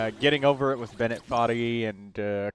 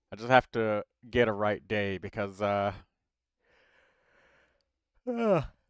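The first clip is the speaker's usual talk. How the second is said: yawning while speaking, slower. Live streamer talking to a viewer, yawning mid-sentence. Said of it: "sorry, yawning".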